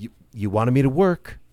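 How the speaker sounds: nasty passive-aggressive tone. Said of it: "this kind of nasty passive-aggressive shit".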